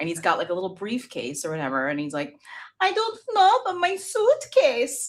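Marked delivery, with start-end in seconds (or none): 2.8-5.1 put-on child's accent, higher and louder. Retelling a video of a four-year-old in a suit: imitating Barron Trump's little accent.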